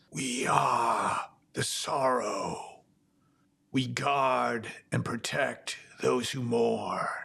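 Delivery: rasping, raspy voice. Narrating a game scene, voice two shadows confronting the listener in a raspy voice. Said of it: "in this kind of raspy voice".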